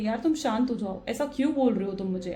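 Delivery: ordinary delivery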